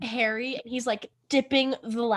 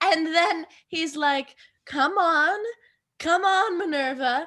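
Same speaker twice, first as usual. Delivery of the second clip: slow, unhurried, fake British accent; 5 semitones higher than usual. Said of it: "I shall do this part exclusively in my British accent".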